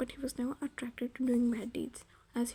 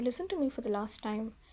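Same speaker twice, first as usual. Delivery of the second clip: plain reading voice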